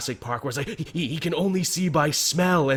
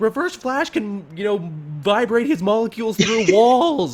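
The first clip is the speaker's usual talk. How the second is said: yelling, higher in pitch and louder; 7 semitones higher, 5 dB louder than usual. Retelling what was yelled at the TV during an episode: retelling own yelling at TV. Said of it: "I was yelling at my T V".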